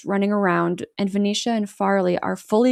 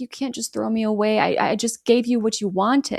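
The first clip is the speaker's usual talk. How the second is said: mock whiny pleading voice. Recapping a scene, quoting one character pleading with another, imitating a whine. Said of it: "he whines".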